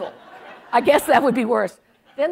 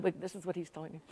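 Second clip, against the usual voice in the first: usual speaking voice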